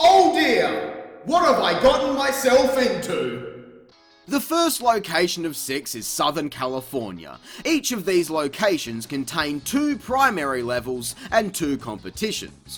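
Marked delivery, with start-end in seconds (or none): 0.0-3.5 loud exclamation, much higher pitch. A character reacts after the narrator announces a special mission, loudly. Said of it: "(Jak, loudly)".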